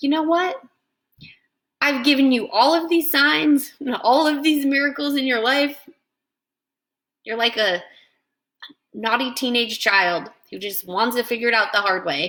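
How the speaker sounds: angry, sarcastic, sharp tone. Contrasting a loving message with another way of saying it, sarcastic and angry. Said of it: "I could be sarcastic and angry".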